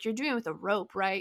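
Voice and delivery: mock patronizing, condescending, talking-down tone. Retelling a man's question to the speaker, mimicking a condescending tone. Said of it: "He said it like really condescendingly".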